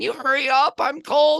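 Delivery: put-on very high, slow small-child voice. Retelling a golf video where a kid complains off camera: imitating a little kid's voice. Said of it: "you hear a little voice go".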